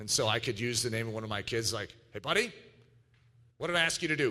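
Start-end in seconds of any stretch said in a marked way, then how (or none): 2.1-4.3 stern, serious, no-nonsense dad voice. A father showing the voice he uses with his kids: stern Daddy voice. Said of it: "It's a Daddy voice".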